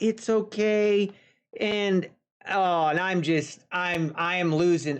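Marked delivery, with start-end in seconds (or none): 0.0-1.1 put-on reassuring tone. Retelling how a seatmate kept calming her cats: imitating someone reassuring. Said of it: "she keeps reassuring them".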